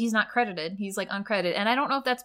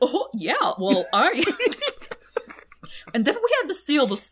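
bad, high, swooping cartoon dog voice; 5 semitones higher, 3 dB louder than usual. Acting out a comic where Goofy talks to Roxanne and Max, in a bad Goofy impression. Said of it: "my Goofy impression is so bad".

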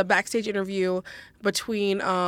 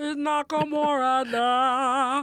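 put-on weird mocking voice, higher pitch; 6 semitones higher than usual. Retelling a promo, mocking the way it was said: imitating Nakamura's weird voice. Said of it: "doing that weird voice".

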